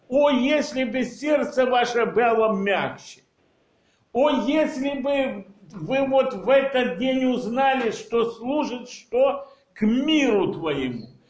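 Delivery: ordinary delivery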